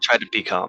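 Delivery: hushed whisper. Trudging up the stairs with city guards nearby, the character speaks whispering. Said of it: "I have like a moment I could like whisper".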